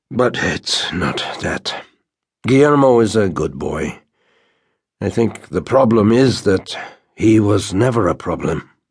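worn-out, spent, tired, weary voice. A father talks about his son to a listener, in a tired voice. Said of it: "in a tired voice".

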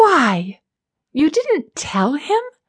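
insistent, demanding, high swooping, drawn out. A woman questions Sharp after Quill throws the rock, demanding. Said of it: "She demanded of Sharp".

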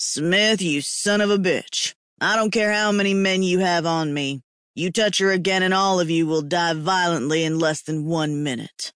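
threatening tone through gritted teeth. A narrator voices a man's threat to their tormentors, threatening through clenched teeth. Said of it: "threatened through clenched teeth".

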